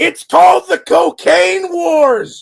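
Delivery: very high, drawn-out, raspy screech. Retelling how someone backstage thrust an album cover at the camera: imitating someone screaming. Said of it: "And he screams".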